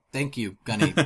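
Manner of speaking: sarcastic, mocking tone. Retelling own reply to a friend's explanation text: retelling own sarcastic thanks. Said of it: "You missed my sarcasm".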